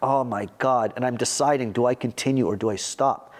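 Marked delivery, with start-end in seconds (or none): 0.0-0.9 put-on sobbing. Retelling breaking down in the street on Broadway: imitating own past crying. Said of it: "I'm crying like".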